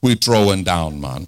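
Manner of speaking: deep Jamaican-style speech. Quoting how friends from Jamaica say it, in a Jamaican accent. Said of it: "like my friends from Jamaica say".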